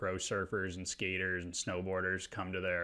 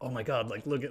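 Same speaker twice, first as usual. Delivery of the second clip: high, stoked, excited, psyched-up cheering; 5 semitones higher, 4 dB louder than usual. Retelling a friend cheering at a wave on old footage: imitating someone getting psyched. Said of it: "you were just getting so psyched".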